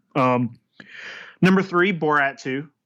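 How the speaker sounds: plain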